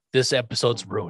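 normal talking voice

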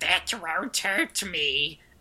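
put-on monster creature voice. Retelling a scene where Diana, held at gunpoint by Sophie, answers in a Gollum voice. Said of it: "in her Gollum voice is like".

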